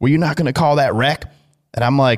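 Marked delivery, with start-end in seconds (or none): 0.0-1.2 indignant, accusing, blaming scream. Retelling what was screamed at them during a race: imitating someone screaming. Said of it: "He starts screaming at me".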